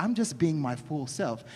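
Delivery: ordinary talk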